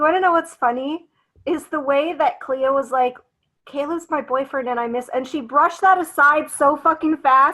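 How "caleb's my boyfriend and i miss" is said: ordinary talk, nothing marked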